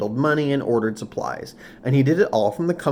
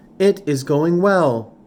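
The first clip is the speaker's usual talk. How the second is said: machine-like voice, slow and loud; 4 semitones higher, 5 dB louder than usual. Roz answers Mister Sharif as he leans out the window: Roz's robotic voice. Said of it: "said Roz in a robotic voice".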